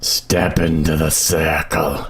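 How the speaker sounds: deep, low demonic voice. Speaking as the Dungeon Keeper, demonic Dungeon Keeper voice. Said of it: "make that sound demonic".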